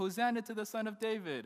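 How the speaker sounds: put-on high, loud, joyful shout in children's voices. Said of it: "children were shouting".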